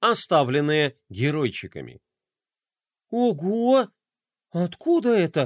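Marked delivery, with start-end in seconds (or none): 3.1-5.5 high, astonished, surprised, drawn-out ого. The boy Roma notices the crafts left on his desk, surprised. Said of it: "удивился мальчик".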